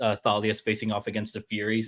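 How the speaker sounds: normal talking voice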